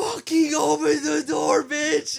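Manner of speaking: very high-pitched, shrill, panicked screaming. Retelling how Selena reacted to a little girl holding the door, imitating Selena screaming. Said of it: "she is screaming for her life".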